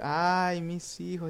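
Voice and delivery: weeping, mournful ghostly wail. Acting out the ghost woman crying for her children: wailing ghost lament. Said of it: "clamando por sus hijos y cuyos lamentos".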